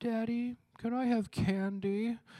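put-on slow, sweet, cute little-kid wheedling. Retelling how the five-year-old asks for candy: imitating a child's cute plea. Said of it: "like, cute face thing".

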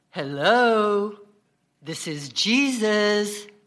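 deep, very slow, sacred-sounding holy intoning. Retelling a man pranking a woman praying at the altar, in a put-on deep sacred-sounding voice. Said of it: "in his deepest, most sacred-sounding voice".

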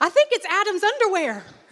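amazed, full of wonder. Telling a joke, a boy answers his mother's question: astonished. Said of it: "With astonishment in his voice".

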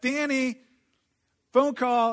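high-pitched, acted-out, loud yelling. Speaker retells his mom yelling up to him about a phone call, imitating mom yelling. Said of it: "she yells up to me".

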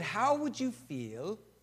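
put-on plain English accent. Retelling what church leaders in england asked: british accent. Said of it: "with their British accent".

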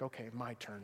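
calm, quiet, low, soft voice.

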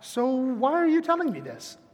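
very polite, courteous, non-antagonistic tone. Showing how to ask the question instead: polite. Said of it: "You can just very politely ask".

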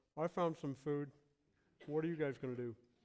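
acted speech with mouth half full. Imagining what he could have said, acting out talking with mouth half full. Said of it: "with a mouth half full".

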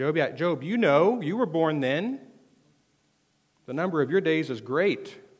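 very loud, swooping, heavily sarcastic voice. Retelling God's words to Job: sarcastic God voice. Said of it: "God gets a bit sarcastic".

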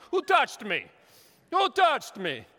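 put-on loud, high, big belted Italian accent. Acting out Jesus in a Bible story: Jesus in Italian accent. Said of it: "so I'm feeling very Italian".

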